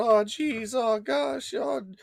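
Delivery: very high, very slow, stretched-out cartoon voice. Complaining that a catchphrase now sounds like Morty: Morty voice. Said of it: "Rick and Morty".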